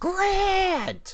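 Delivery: put-on very high, long, drawn-out shriek. Retelling a movie scene where a character screams a name: imitating a scream. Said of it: "he screams".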